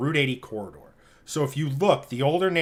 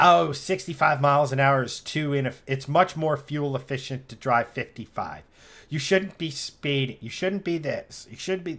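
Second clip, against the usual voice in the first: plain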